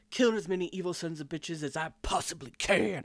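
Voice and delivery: very emphatic, every word heavily stressed. Quoting a character's line from the recaps, the speaker imitates very emphatic delivery. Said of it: "Very emphatic".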